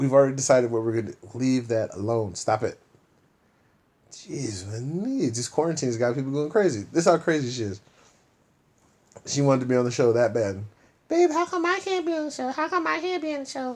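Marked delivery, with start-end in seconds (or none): 11.1-13.8 very high, squeaky voice. Imitating his partner begging to be on the show: imitating his partner's voice. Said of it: "I don't sound like that".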